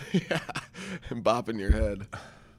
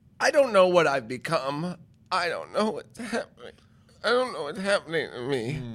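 voice cracking and breaking partway through the line; 3 semitones higher than usual. Mid-rant about CBD products, the speaker talks with his voice breaking. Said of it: "my voice is breaking".

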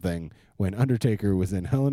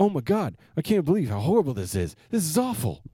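super eager voice, pitched high; 9 semitones higher than usual. Mocking how an actor sounds in movies: super eager John Cena voice. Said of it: "And he does that every time, like".

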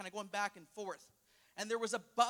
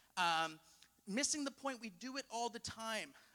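plain

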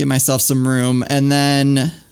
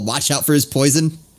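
ordinary talk

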